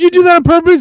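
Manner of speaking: shrill, very loud, pitched way up outburst. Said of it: "He's like".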